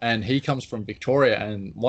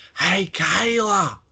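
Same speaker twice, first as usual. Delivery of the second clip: put-on very high, shrill scream in Australian accent; 9 semitones higher, 4 dB louder than usual. Speaker admits trying his best at a catchphrase Josh does better: screaming IIconics impression. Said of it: "I try and do my best Iconic and go".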